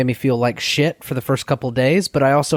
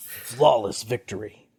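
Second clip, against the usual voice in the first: put-on announcer voice, much lower, quieter; 2 semitones lower, 6 dB quieter than usual. Host opening an episode about Mortal Kombat, doing the Mortal Kombat announcer voice. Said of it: "just do some some announcer voice".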